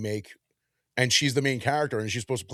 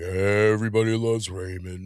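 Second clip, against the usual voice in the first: sagging, droopy, downcast voice; 2 semitones lower than usual. Describing a sitcom actor's voice, imitating Robert's droopy Eeyore-like voice. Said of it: "he always talk like this".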